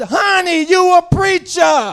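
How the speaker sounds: long, drawn-out shout, high and loud. Retelling what a wife yelled out during a horn standoff: imitating someone yelling out. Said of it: "my wife yelled out".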